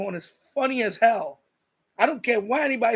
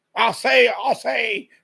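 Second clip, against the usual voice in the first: put-on rooster voice with southern accent; 4 dB louder than usual. Talking about a favorite cartoon, doing a Foghorn Leghorn impression. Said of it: "That rooster".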